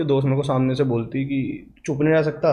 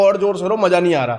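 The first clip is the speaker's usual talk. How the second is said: put-on, loud yelling; 4 semitones higher, 3 dB louder than usual. Speaker retells what he said to a crying girl during a fight, retelling a shout. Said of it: "मैं चिल्ला के बोला".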